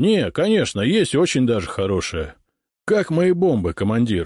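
plain

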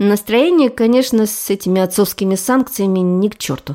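ordinary delivery

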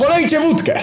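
very high shouted voice. First-person narrator reading his own reply: shouted back. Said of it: "odkrzyknąłem tylko".

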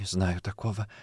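half-whispered, trembling, shaking voice. Asked about Andrei Derkach, she answers, trembling half-whisper. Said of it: "прошептала она, но голос дрожал".

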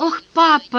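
very high, delighted, joyful cry. Narrating a novel, Dru greets her father, exclaiming joyfully. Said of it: "радостно воскликнула она".

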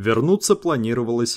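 plain

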